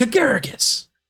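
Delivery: whispered line. Voicing a character who calls over to Agaragos: whispering a character's line. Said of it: "kinda whispers".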